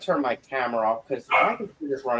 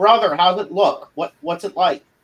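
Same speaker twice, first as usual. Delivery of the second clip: loud, high yelling carrying across a room; 6 semitones higher, 7 dB louder than usual. Yelling over to a party member across the room: yelling over to a companion. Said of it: "I'm gonna yell over".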